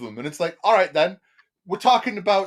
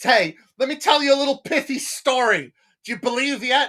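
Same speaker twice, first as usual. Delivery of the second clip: sarcastic, mocking send-up voice, pitched up; 6 semitones higher than usual. Mocking how the book's author keeps pushing the reader to believe: mocking the book's author.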